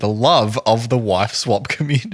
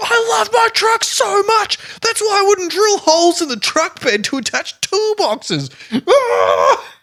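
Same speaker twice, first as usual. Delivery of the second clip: very high, unhinged, crazed screaming. Speaker retelling what a man said by his truck, imitating someone screaming. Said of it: "he's like screaming about how".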